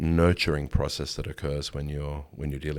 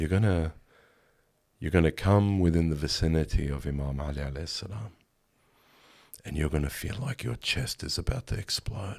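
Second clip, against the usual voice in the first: mock soft-spoken male voice. Retelling a man's words spoken to him in arabic, retelling soft-spoken words. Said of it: "softly spoken".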